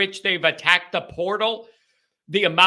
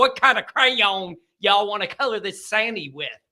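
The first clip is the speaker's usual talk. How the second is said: affected, put-on Southern American accent. Asking which crayon to color sandy with, in a put-on southern accent. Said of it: "it turned into a southern accent".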